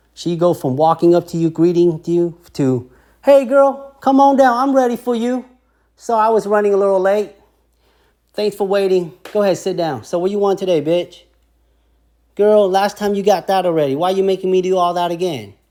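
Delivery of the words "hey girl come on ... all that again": casual, familiar, chummy friendly chatter, pitched up. Retelling how a nail tech talks to a loyal client: imitating a nail tech, casually familiar. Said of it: "the attitude of the nail tech is your friend now".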